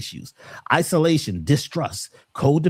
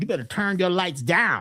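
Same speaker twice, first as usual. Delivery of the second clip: put-on stern, scolding voice of an older person; 3 semitones higher than usual. Imitating what people are taught about dimming their aura: old parent voice. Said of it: "That's like the old parent voice".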